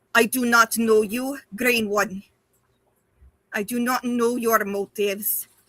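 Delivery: pained voice, spoken through gritted teeth. Speaker voices a character in pain addressing the green one, through gritted teeth. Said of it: "through gritted teeth, she is just going".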